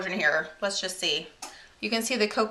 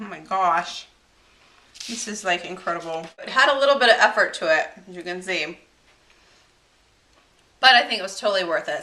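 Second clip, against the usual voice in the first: loud, talking through a mouthful, mid-chew; 6 dB louder than usual. Tasting cupcakes at the end of a baking video, the host talks while chewing. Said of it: "Sorry, I'm like chewing".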